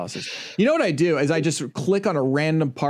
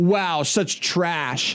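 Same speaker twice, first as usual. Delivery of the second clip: sarcastic, mocking tone; 3 semitones higher than usual. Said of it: "that's sarcasm".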